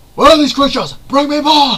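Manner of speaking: very loud, high-pitched, huge bellow. Imagine Thor coming down into the movie and beating everyone, Chris Hemsworth's Thor voice. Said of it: "Chris Hemsworth as Thor".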